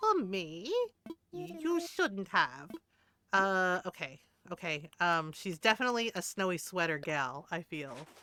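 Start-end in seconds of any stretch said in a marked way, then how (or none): 0.0-2.7 put-on posh voice. Voicing Julia, a hoity-toity villager, receiving a gift: posh Julia voice. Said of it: "my voice for her is a little".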